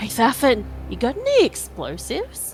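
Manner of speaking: stage whisper. Calling to a companion so the bandits won't hear, stage whisper. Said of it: "can I sage whisper to Thafin".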